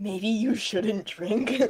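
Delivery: hushed, slow, low-key speech. Stepping closer to Junia in character, speaking quieter.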